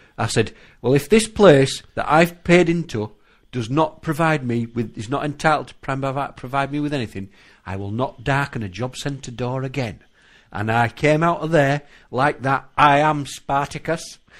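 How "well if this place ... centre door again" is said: ordinary talk, nothing marked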